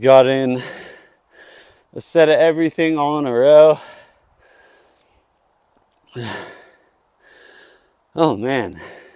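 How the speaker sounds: winded, catching breath. Speaker talks to viewers right after finishing a lifting set: out of breath. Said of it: "That's got me out of breath".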